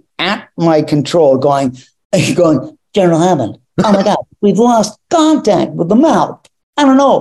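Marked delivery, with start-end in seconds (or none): 3.0-7.2 hammy, over-the-top, rushed and swooping delivery. Retelling being filmed and told to do the scene as Kirk, over-the-top Kirk impression. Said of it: "this over the top Kirk thing".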